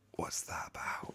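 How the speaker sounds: hushed whisper. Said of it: "And we were like".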